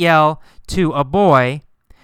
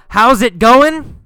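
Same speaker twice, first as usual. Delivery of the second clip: high yell at full voice; 8 semitones higher, 4 dB louder than usual. Explaining the word yell, showing how he greeted the girl: yelling. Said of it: "Did he yell".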